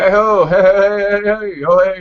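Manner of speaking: awful put-on Irish accent. Mocking how the non-irish actors sound, bad irish accent. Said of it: "Do they go like this?".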